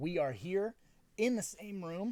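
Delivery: voice breaking, cracking and high-pitched. Commentary host opening the show with the co-host, voice cracking. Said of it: "my voice cracked".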